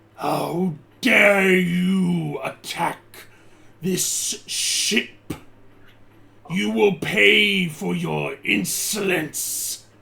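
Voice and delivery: booming, slow dragon voice, "you" drawn out. Game master voicing the dragon as the last crew falls, booming dragon voice. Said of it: "you hear this booming voice come from the dragon".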